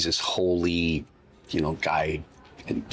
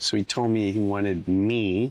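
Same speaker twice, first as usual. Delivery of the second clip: plain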